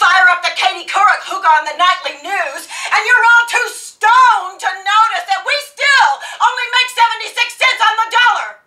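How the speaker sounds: very high, very loud, shrill, scornful sarcastic rant. A woman rails at a younger woman's generation, in a sarcastic, indignant tirade. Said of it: "You and the rest of your generation are all too busy getting boob jobs and counting carbs to notice that women are still royally screwed. They pat you on the head, they tell you discrimination is over. Who needs equal".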